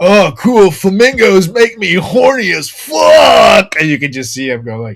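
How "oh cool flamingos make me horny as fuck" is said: put-on aggressive voice. Retelling the other speaker's remark from a video: imitating an aggressive drunk line. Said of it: "so aggressive".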